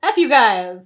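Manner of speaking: loud, angry, spat-out outburst. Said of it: "he was like".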